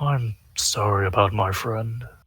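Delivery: quiet half-whisper with the voice dropping away. Speaking in character to the Wog about a friend: half-whispering. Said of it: "I whisper to the Wog".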